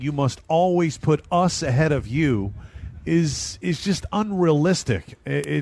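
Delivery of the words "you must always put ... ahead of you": ordinary delivery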